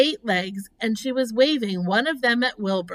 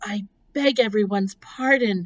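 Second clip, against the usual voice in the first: hushed whisper. Apologizing to everyone present, whispered. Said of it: "whispered Wilbur".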